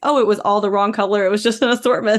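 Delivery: ordinary delivery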